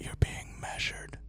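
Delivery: hushed, soft, breathy whisper. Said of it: "it whispers".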